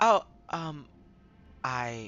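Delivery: shy, halting stutter. Describing Mister Cruz as shy, then imitating her; imitating Mister Cruz's shy stutter. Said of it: "she's shy, very. She stutters a lot".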